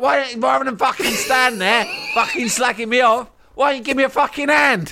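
acted, shrill, high-pitched, angry cockney yell. Retelling confronting people who talk about them, acting out own shouting. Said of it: "I'm just shouting at them louder and louder".

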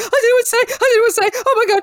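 very high, loud, tongue-tied, flustered gushing babble. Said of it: "he literally lost his fucking shit".

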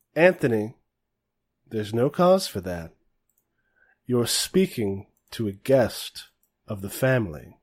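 quiet, soft-spoken voice that still carries. Retelling someone's remark in front of everyone, in a soft-spoken but carrying voice. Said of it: "it's this like voice that is soft spoken but loud enough that everybody can hear it".

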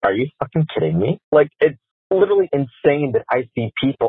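furious, fed-up, really angry outburst. Venting about someone who left them on read during a pandemic, angry. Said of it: "I'm like really angry".

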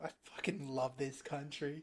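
hushed, very quiet English accent. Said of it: "Why are you British?".

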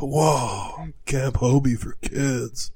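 put-on, laid-back surfer voice. Reading a camp name aloud in a Keanu voice. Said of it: "a Keanu voice".

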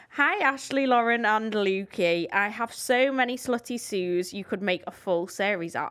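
ordinary talk, nothing marked

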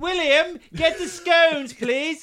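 very high, slow, unhurried, posh royal voice. Chatting with a co-host about saying scone, doing the Queen's voice. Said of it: "The Queen would have said scone".

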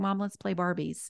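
ordinary delivery

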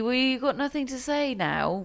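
timid half-mumble. Retelling what Holger Rune said after the handshake: imitating him saying it meekly. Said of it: "he sort of says quite meekly".

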